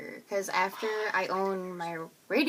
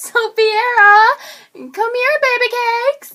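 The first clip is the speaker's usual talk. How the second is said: mock cute yelling, higher and louder; 16 dB louder than usual. Acting out a parent calling a child: imitating a cute parental yell. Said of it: "you would have to yell at her in a cute way".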